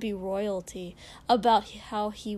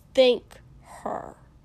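sharp, raised, sharply spoken voice; 3 semitones higher, 7 dB louder than usual. Kosuke tells Shoto to thank the servant, said sharply. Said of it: "Kosuke said sharply".

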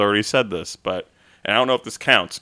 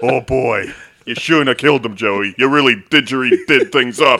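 put-on comic New Jersey accent; 3 semitones higher, 6 dB louder than usual. Joking about a made-up word, the speaker does a bit in a New Jersey accent. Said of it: "Saying it that like New Jersey accent".

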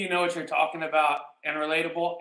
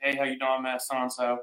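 put-on, fake friendly tone, lower pitch; 3 semitones lower than usual. Retelling greeting an older neighbor on his floor: imitating own fake friendly greeting. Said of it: "I do my fake friendly shit".

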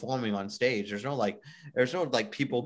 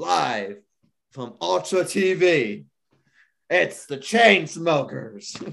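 loud, very deep put-on announcer voice; 6 semitones higher, 8 dB louder than usual. Announcing a festival live stream like the act introducer: deep Ultra announcer voice. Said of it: "I sound like the guy that, who introduces all the groups".

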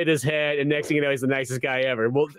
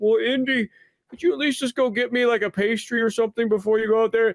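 put-on mopey voice; 7 semitones higher than usual. Retelling a scene, speaker acts out Remy asking Indy for something, mock-sad and mopey. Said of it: "just being all sad and mopey".

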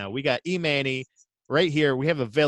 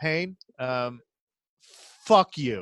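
very slow, plodding, drawn-out reading. Doing an impression of Manny reading his letter aloud: Manny impression. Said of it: "let me do my impression of Manny reading his letter".

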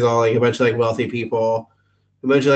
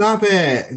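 put-on small child's voice; 8 semitones higher than usual. Retelling a movie scene where a kid is sprayed: imitating the kid from Billy Madison. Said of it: "and the kid's like".

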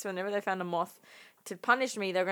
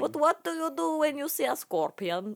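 put-on Swedish accent, pitched high; 7 semitones higher than usual. A performer whose accent keeps changing, now swedish accent. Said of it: "Swedish now".

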